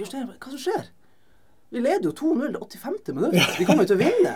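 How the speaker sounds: high, loud, incredulous tone.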